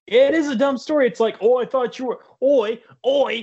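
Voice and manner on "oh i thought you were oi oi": put-on British accent, higher pitch. Mocking Romeo and Juliet's lovers: mock British accent. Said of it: "'cause we all know they're British".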